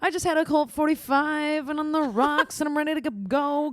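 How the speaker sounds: drawn out, slow and high. Imitating a viral meme sound for the other speaker: Kylie Jenner meme impression. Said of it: "Kylie Jenner, like, little sound meme".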